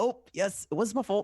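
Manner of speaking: put-on Canadian accent. Joking with the group about Canadians, in a put-on Canadian accent. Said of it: "that's my Canadian".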